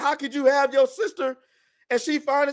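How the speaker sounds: mock shrieking, high-pitched screaming. Retelling an anime scene where a character keeps screaming: imitating a character screaming.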